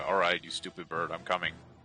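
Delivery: mumbling under breath. Playing a character going after a bird in a game, mumbling under breath. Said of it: "I'll just mumble like".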